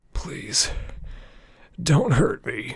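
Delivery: very high, croaking, begging tone. A narrator reads a man's plea to the narrator after a long silence, croaking. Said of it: "he croaks".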